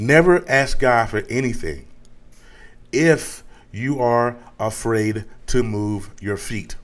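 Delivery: slow, deliberate, carefully spelled-out, word by word. Warning the listeners about asking God, a speaker says it slow and deliberate. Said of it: "I'm gonna say this real slow".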